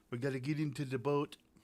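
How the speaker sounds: bad put-on Jamaican accent. Planning the day's fishing trip, in a bad jamaican accent. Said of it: "that's my Jamaican accent".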